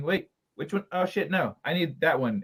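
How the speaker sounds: ordinary delivery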